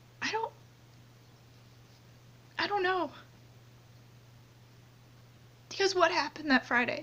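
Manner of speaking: crying while talking. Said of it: "I'm sorry again that I'm crying".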